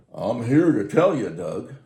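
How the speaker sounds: very loud, big booming voice. Quoting how the next-door neighbor always started off, imitating a big booming voice. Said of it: "this guy had a big booming voice".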